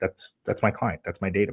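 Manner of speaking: usual speaking voice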